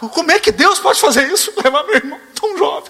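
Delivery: acted-out, very high-pitched, desperate, despairing cry. Retelling the grief over a brother who died at 97, acting out a desperate lament. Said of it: "Eu estava desesperado".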